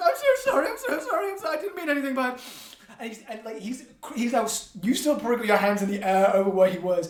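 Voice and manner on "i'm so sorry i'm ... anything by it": very high, sobbing, tearful, pleading tone. Narrating a scene, the speaker voices Spindle apologizing after dropping to the floor: Spindle weeping apology. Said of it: "wiping the tears away from his eyes".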